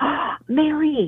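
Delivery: energetic, thrilled oh. Demonstrating how a single exclamation can carry energy, saying a name with excitement.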